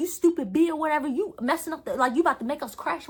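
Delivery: put-on mild yell. The driver retells what he yelled while they fought over the steering wheel: retelling his yell. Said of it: "he's yelling like".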